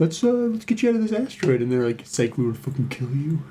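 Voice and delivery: mock snarky British accent, droid-like voice. Retelling what the game's murder droids say: imitating snarky British droids. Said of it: "doing, like, a snarky British accent the whole time".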